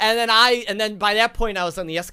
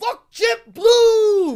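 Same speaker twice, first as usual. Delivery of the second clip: put-on male scream, higher and louder; 13 semitones higher, 5 dB louder than usual. Retelling how a man in the terminal screamed: imitating a man screaming. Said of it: "just screaming".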